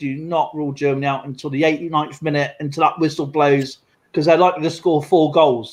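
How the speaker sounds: ordinary talk, nothing marked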